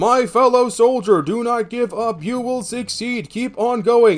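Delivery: computer-generated reading voice. Reading a message aloud, text-to-speech voice. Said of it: "I am reading that in the fucking, text-to-voice, speech voice".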